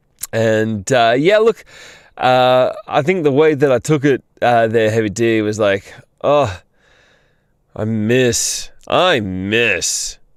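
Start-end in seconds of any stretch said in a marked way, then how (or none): 6.2-10.1 very slow, sarcastic Australian drawl, "miss" stretched. Reading a chat message the way it was taken: imitating a sarcastic Aussie tone. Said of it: "the natural Aussie sarcastic tone".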